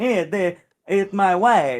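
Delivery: high, loud, drawn-out foreign-sounding voice. Retelling a movie character's lines: Borat voice. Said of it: "that's how he talks".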